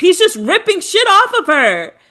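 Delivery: play-acted, piercing, very high, shrill shriek. Retelling a woman screaming during a baby-changing segment, mock-screaming. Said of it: "And then she's screaming".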